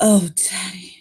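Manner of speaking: long drawn-out moan. Showing another person how to deliver the line, the speaker says it slow and moaning. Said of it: "say it really slow and with a little bit of a moan".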